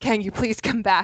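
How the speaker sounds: urgent, pressing voice. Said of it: "She had this urgency in her voice".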